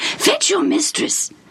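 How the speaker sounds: excited whisper. The royal official, back inside, addresses the servant, excited whisper. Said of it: "he said to the servant in an excited whisper".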